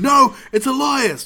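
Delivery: mock shrill, high, very loud yell. Retelling him yelling back and forth with the crowd: retelling Kevin Owens' yell. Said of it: "Just yelling back and forth".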